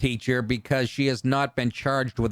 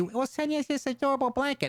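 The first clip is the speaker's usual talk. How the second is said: put-on high, young little kid voice; 12 semitones higher, 4 dB quieter than usual. Retelling how the kid in the commercials used to talk: imitating a kid's earlier voice. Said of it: "he used to say".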